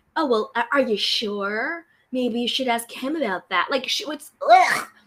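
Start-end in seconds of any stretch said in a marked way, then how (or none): 0.1-3.6 imitated self-righteous, superior, condescending tone. Acting out Tiffany being annoying, in a mock-condescending Tiffany impression. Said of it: "that weird self-righteous kind of condescending tone".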